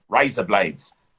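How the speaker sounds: Australian vowel sounds on the words razor blades. Teaching someone how to do an australian accent, australian accent. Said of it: "There you go".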